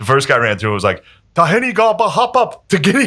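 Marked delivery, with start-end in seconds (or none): 1.3-3.1 very high, slow, long-drawn scream. Retelling a captive running a gauntlet: imitating someone screaming. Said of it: "he just screamed shit".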